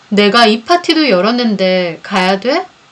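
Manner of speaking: plain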